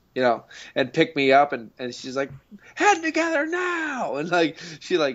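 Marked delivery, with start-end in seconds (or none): 2.7-4.1 mock, very high, screamed yell. Retelling how a mother screamed commands to hold a head together. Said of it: "she basically screamed all the commands".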